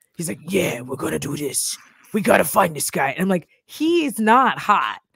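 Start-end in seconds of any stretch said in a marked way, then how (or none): 0.5-3.1 low, gravelly, rough, no-nonsense tough-cop growl. Describing a man on Chicago PD, quoting him in a gravelly Chicago PD voice. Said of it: "He has a gravelly voice".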